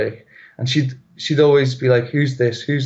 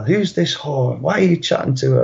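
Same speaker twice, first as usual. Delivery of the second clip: mock half-hearted, mild, accusing scream; 2 semitones higher than usual. Retelling being woken at night by a partner: imitating someone screaming. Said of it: "she starts screaming at me".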